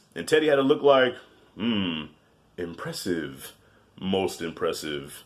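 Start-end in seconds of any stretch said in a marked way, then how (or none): 1.6-5.3 villain voice, very low and slow. Acting out a character's silent look: Darth Vader voice. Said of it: "That was my Darth Vader voice".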